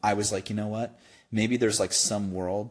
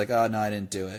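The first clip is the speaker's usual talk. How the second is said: put-on flippant, casual, dismissive tone. Recalling a classmate answering the teacher about missing homework, imitating a flippant reply. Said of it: "he was like so flippant about it".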